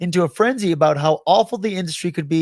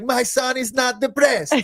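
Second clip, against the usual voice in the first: put-on pitched-up mom character voice with Latin accent; 7 semitones higher than usual. Friends recalling sketch comedy characters; quote the latin mom in a latin mom voice. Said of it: "like the like Latin mom was like".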